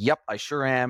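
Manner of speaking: ordinary delivery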